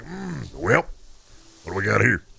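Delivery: put-on low creaky old-man voice. Retelling an old guy entering a retail store: imitating an old guy customer. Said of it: "they're like".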